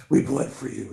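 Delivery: loose, brooding superhero voice with dark edge. Leading everybody with fists up in the line: kind of like Batman voice. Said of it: "kind of sort of like Batman voice".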